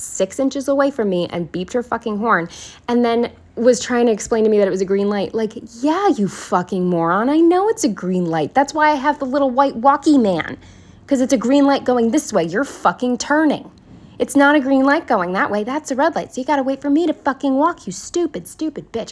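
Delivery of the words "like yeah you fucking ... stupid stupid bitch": put-on furious, pitched-up ranting tirade. Recounting a driver honking at them while they crossed, ranting furiously. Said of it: "I was so fucking pissed off".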